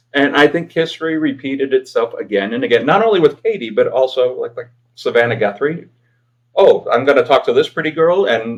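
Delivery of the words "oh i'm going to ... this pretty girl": play-acted patronizing, self-assured, condescending voice. Retelling how guests treated a female interviewer: imitating a condescending interviewee. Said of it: "don't condescend".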